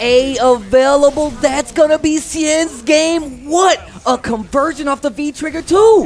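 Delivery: big, high, loud hype commentator-style call.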